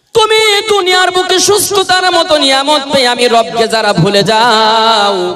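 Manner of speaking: loud call full of great regret.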